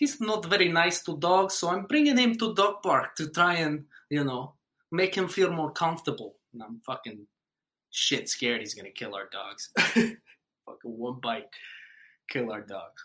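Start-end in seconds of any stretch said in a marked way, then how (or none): 0.0-6.4 put-on high, raised woman's voice with Russian accent. Retelling what a Russian lady at the dog park said, imitating a Russian lady. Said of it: "with the Russian lady, too, she was just like".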